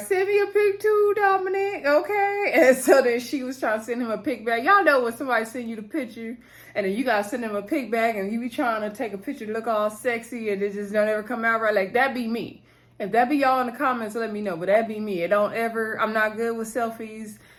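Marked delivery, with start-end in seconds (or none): 0.0-2.5 very high, playful, teasing put-on voice. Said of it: "I was like".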